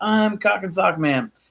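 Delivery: put-on drawn-out, yelled proclaiming call. Speaker recounts a guy jumping on people's foot lockers: imitating a guy yelling out. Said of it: "he's like yelling out".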